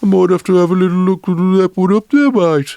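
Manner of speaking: put-on Dudley accent, very high. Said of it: "Think of the accents".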